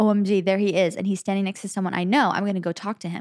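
ordinary talk, nothing marked

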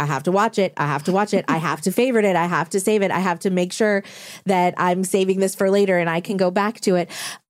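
ordinary talk

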